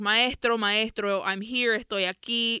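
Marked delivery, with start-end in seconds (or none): none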